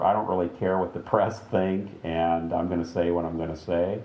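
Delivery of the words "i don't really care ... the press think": usual speaking voice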